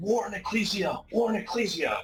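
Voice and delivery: shrill, very high battle-cry yell. Narrating a fight, the speaker voices the hunters' cry: battle cry yell. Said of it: "You hear the hunters yell".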